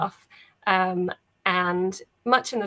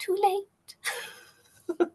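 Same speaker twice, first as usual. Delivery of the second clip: tiny, very high, little voice; 12 semitones higher, 4 dB quieter than usual. Describing what the listeners hear, voiced as a disembodied little voice. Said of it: "You hear a disembodied little voice saying".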